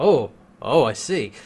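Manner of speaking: ordinary talk, nothing marked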